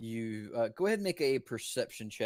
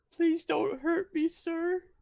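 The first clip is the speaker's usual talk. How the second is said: put-on very high, raised young boy's voice; 5 dB louder than usual. Voicing a small boy who comes out from behind a barrel: small boy voice. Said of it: "a small bronze dragonborn boy, probably about eight years old".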